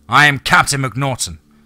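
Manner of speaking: firm, clear voice. Stepping onto the porch to face the thing calling him, the narrator answers in a firm, clear voice. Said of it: "I said in a firm and clear voice".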